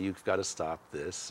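acted-out sobbing, pleading, crying while speaking. Recounting a dream, retelling what the speaker said to him while sobbing. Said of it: "I start sobbing".

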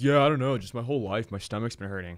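ordinary talk

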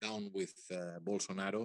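ordinary delivery

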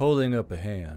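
ordinary delivery

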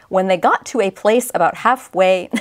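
ordinary talk

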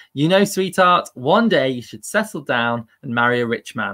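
ordinary delivery

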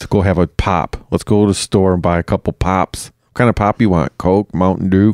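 accent from Michigan. Showing the other speaker how locals talk, in a Washtenaw County Michigan accent. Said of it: "Washtenaw County accent".

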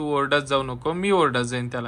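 usual speaking voice

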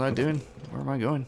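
ordinary delivery

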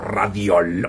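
angry-sounding delivery. Giving the official voice of Radio Lobo: sounding as if angry. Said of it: "¿por qué dices Radio Lobo así como si estuvieras enojado?".

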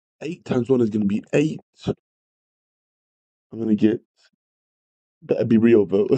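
giggly, barely composed, laughing through the words. Working through a fraction problem with a class, laughing while talking. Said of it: "sorry, I can't stop laughing".

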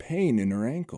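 ordinary delivery

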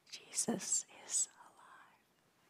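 soft, hushed, breathy whisper. Leading a group to say a secret together, whispering. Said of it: "we're going to kind of whisper it together".

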